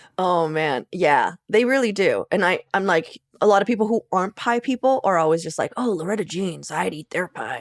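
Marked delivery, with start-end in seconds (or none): 5.8-7.7 put-on husky, throaty delivery. Imitating people who aren't pie people, in a husky put-on voice. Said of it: "husky voice that you did for this non-pie lover".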